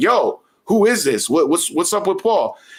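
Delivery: play-acted, high, alarmed, frantic panicked voice. Retelling a prank call he believed meant a friend had died: retelling own panicked words. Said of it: "So my heart starts thumping".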